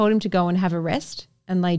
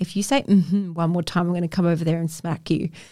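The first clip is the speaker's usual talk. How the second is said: ordinary talk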